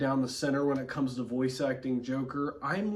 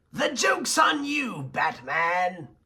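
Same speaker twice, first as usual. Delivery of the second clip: put-on villain clown voice, higher; 5 semitones higher, 4 dB louder than usual. Moving into Mark Hamill's version: Mark Hamill's Joker voice. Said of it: "more of the Mark Hamill thing".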